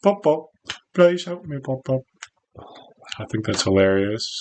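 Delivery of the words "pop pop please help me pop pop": put-on English accent with raised pitch. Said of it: "pop pop with an English accent".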